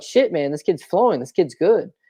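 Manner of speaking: ordinary talk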